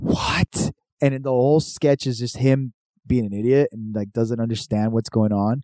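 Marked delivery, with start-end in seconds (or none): 0.0-0.7 mock whispering. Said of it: "he's whispering this whole time".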